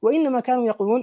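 normal talking voice

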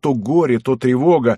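ordinary delivery, nothing marked

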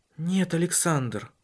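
worn-out, drained, weary, tired voice. A woman answers a man who asks whether she has a lover, wearily. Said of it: "устало ответила она".

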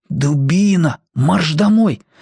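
slow whisper. Timka speaks from inside a sack to Petka; whispered. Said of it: "прошептал из мешка Тимка".

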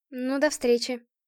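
halting, timid, faltering murmur. A woman ends a phone call with Vsevolod, babbling timidly. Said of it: "пролепетала".

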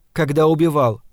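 plain reading voice

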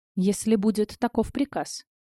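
plain

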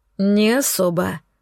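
muttered, mumbling delivery. A hapless necromancer answers the narrator while searching the floor, muttering. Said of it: "пробормотал этот горе-некромант".

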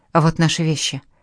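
ordinary delivery, nothing marked

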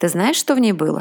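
plain

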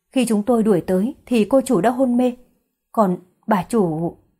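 ordinary delivery, nothing marked

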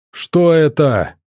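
loud, projected call, as if over crashing noise. Amid howling and crashing outside the walls, Baton calls out: shouting over the din. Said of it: "прокричал Батон сквозь грохот".

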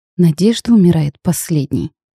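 softly, quietly. Narrator, as the heroine at the table, answers her fiancé: quietly. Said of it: "тихо отозвалась я".

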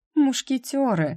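very high-pitched, laughing, chuckling voice. A mother corrects her daughter's word for the narrator: with a chuckle. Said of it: "издав смешок".

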